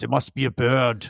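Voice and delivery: put-on Austrian accent. Quoting a man's remark in an impression, Arnold Schwarzenegger Austrian accent. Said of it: "I don't know why I'm doing Arnold Schwarzenegger now".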